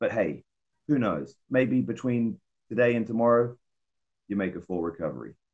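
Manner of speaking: sly, knowing remark slipped in as a confidential aside. Retelling what someone said so no one could hear: imitating someone speaking quietly. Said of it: "real quiet, like, so no one can hear".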